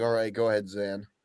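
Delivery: soft, play-acted, slightly irritated tone. Imitating Johnny telling Zan to go ahead: imitating Johnny sounding annoyed. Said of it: "Johnny sounded a little annoyed".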